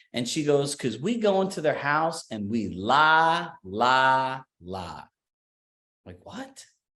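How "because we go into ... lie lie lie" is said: put-on Southern accent with words stretched long. Retelling a talk by Lee Brown, from the Carolinas, imitating her Southern accent. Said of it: "in her Southern accent is like".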